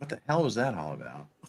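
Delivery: put-on voice, low, quick, soft grumble.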